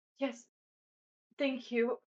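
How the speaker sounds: breathless, catching breath. Playing a wounded character collapsing into Aura's arms, answering out of breath. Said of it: "just catch my breath and be like".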